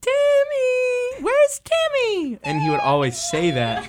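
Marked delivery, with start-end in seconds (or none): 0.0-2.4 put-on very high-pitched boy's voice, name stretched long. Imitating an eighth-grader who always asked the group for Timmy, high-pitched voice. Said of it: "he had a really high-pitched voice".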